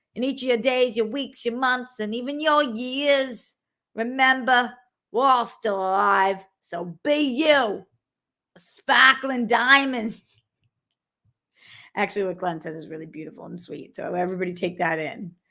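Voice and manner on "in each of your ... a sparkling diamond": overdone, slow, fake Boston accent. Streamer reading a viewer's donation message aloud, fake Boston accent. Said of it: "I'm going to do this in their Boston accent".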